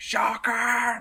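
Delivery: mock very high, shrill scream. Retelling a nineties cartoon chase after Shocker: imitating Spider-Man screaming. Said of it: "screaming at him, like".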